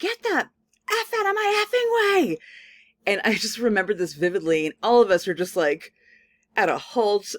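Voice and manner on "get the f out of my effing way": acted shrill, high-pitched, shrieking scream. Retelling a driver yelling from her car window, imitating a woman screaming. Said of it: "she's screaming".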